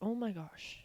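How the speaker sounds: mock, put-on freaked-out, panicked outburst of alarm. Retelling a dream where a girl is seizing: imitating own panic. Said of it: "So I'm freaking out".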